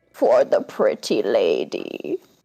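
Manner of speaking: croaking garbled voice. Narrator voices a creature holding out a moth to a woman: croaking garbled voice. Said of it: "it croaks out in a garbled voice".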